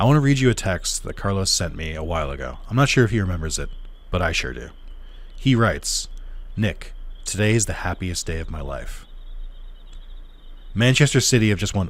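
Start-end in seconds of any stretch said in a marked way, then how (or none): none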